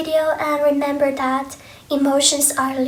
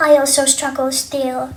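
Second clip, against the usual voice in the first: usual speaking voice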